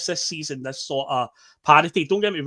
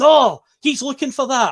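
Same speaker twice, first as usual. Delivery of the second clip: very high, slow, drawn-out shout; 9 semitones higher, 7 dB louder than usual. Retelling what a referee said on the pitch: imitating a referee shouting. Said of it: "the referee shouts".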